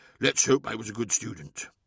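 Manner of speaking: ordinary delivery, nothing marked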